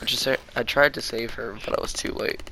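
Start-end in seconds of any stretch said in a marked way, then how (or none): none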